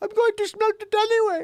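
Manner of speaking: put-on, shrill, very high, very loud, booming voice. Imitating how a person sounds talking: Melania Trump impression. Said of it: "That's how she sounds".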